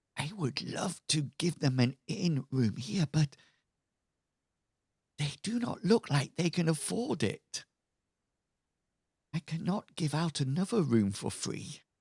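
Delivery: secretive, hushed half-whisper. Voicing a character who crouches to eye level: half-whispering. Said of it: "whispers in your rather large, pointy ears".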